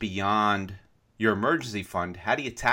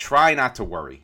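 "try" leaned on hard, louder. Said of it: "I'm gonna emphasis the word try".

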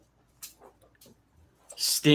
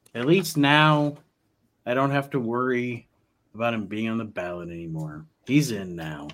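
weary, defeated, resigned tone. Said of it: "he sounds so defeated".

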